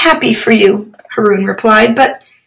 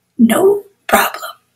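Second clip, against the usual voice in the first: tiny, very high, squeaky little voice; 9 semitones higher, 4 dB quieter than usual. Butt the Hoopoe replying to Haroon, in a tiny miniaturized voice. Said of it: "in a miniaturized voice".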